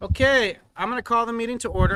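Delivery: loud, high-pitched yelling. Opening the Kaneland Board of Education meeting, yelling. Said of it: "I don't know why I'm yelling".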